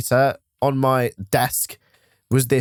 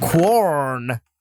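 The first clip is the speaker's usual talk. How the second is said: put-on Bristol accent with "corn" drawn out. Speaker repeating a word to the other speaker: Bristol accent. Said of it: "I need to say it in a Bristol accent".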